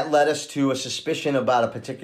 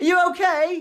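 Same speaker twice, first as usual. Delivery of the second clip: put-on Manchester accent, higher and louder; 4 dB louder than usual. Retelling how the illustrator from Manchester says hello on the phone: imitating Penny's Manchester accent. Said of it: "I love the accent".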